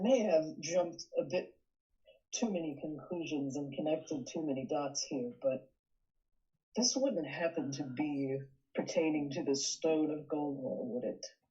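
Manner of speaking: conspiratorial, confiding insider's tone. A character leans in to ask another a question, in a conspiratorial tone. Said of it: "he leans in conspiratorially".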